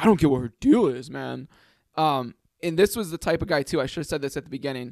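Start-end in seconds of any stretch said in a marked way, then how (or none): 0.0-1.5 raised, dude-style griping voice. Retelling a guy greeting a girl: imitating Derek. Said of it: "he's like".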